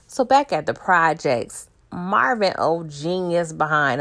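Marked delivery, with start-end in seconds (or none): 1.9-4.0 slow, drawn-out, dripping sarcasm. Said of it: "I'm being sarcastic".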